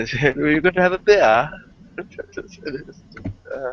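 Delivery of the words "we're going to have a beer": put-on English accent, pitched up. Retelling how others mocked Scrump Monkey, mocking Scrump Monkey's English accent. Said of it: "in his English accent and the way he pronounced beer".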